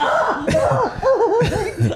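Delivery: mock pained, high, laughing yelp.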